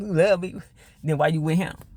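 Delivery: put-on laughing voice. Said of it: "he started laughing like".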